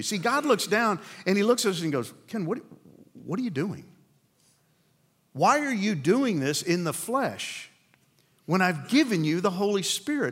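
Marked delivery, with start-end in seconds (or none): 2.3-10.3 put-on gently baffled, befuddled, puzzled tone. The speaker acts out God looking down and questioning Ken, imitating God, befuddled. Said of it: "He may be befuddled".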